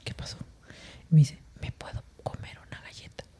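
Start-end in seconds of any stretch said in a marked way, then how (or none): 1.6-3.2 put-on whispered small-child voice. Speaker retelling a woman's timid question, imitating a little girl's soft voice. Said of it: "el tono así hasta bajito".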